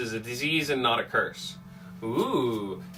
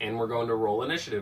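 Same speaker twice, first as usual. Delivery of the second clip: normal talking voice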